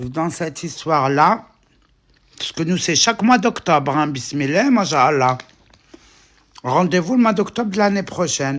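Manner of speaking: talking with mouth full. Speaking to the girls while eating, talking with mouth full. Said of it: "j'aime pas parler la bouche pleine".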